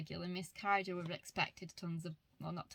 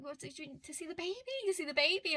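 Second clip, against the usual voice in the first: thrilled, very high, fast excited chatter; 10 semitones higher, 4 dB louder than usual. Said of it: "she was so, so excited".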